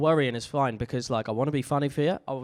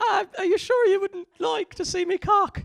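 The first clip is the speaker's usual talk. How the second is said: put-on jokey Irish brogue, very high; 3 dB louder than usual. Speaker imitates how Irish people would sound in porn: Irish accent impression. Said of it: "Irish people, it's probably quite funny".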